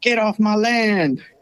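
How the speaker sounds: high, slow country drawl. Retelling what was heard from a farmer's truck: redneck voice. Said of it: "the redneck voice".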